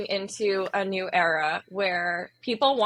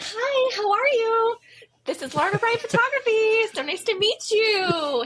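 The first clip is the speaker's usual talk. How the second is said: very high, put-on business customer service voice; 14 semitones higher, 3 dB louder than usual. Speaker recalls how they used to greet clients, in old customer service voice. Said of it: "days of the customer service voice".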